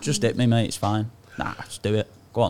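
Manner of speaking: mock dead calm, unbothered. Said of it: "Or just be dead calm".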